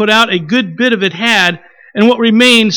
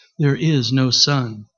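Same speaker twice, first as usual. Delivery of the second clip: slow, grave, soft, deep witch voice; 9 semitones lower, 8 dB quieter than usual. The witch repeats herself to the four silent listeners in a softer, deeper voice. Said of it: "She repeated in a softer, deeper voice".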